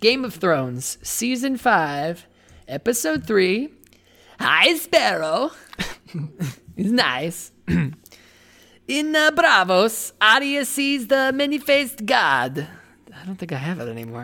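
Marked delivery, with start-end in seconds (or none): 0.0-12.7 put-on Kazakh accent, higher pitch. Recapping a TV episode for listeners: Borat voice. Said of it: "say Borat".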